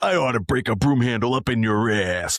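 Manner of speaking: put-on macho action hero voice. Quoting a game character's catchphrase: Duke Nukem voice. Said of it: ""Anything Duke Nukem."".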